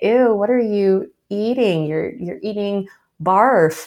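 play-acted, mocking, jeering schoolyard kid taunt. Retelling schoolmates teasing a lunch: imitating mocking kids. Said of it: "kids would make fun of me and say".

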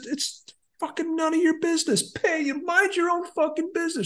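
mock very high-pitched, shrill yell. Telling of a stranger's remark at the roadside, the speaker re-enacts yelling back. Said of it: "And I just yelled back".

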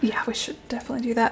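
fast, hushed whisper under the breath.

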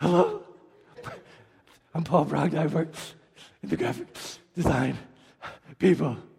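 winded, choppy, halting, breaking mid-phrase. Retelling how Paul Brogna introduced himself while winded, imitating him out of breath. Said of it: "he sounds like he walked up 40 flights of stairs".

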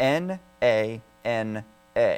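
spelled out slowly, letter by letter.

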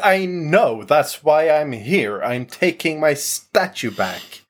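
mild, half-shouted delivery. A player voices their character demanding to be let in, shouting. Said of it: "he's just shouting like".

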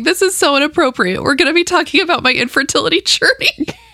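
giggles breaking up the words. Speaker apologizes for laughing while announcing next week's topic; laughing. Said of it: "I'm sorry, I'm laughing".

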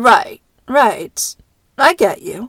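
very slow, smooth, placating voice sliding up and down. On the phone, agreeing with the other caller, slidey, up and down, smooth. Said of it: "your voice goes all slidey, up and down, smooth".

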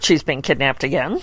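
ordinary talk, nothing marked

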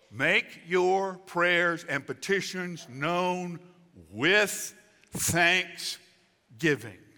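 slow, emphatic, drawn-out stress on with thanksgiving.

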